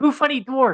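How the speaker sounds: very high kobold character voice. Voicing a disguised kobold greeting a dwarf: voicing a kobold. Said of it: "and she says".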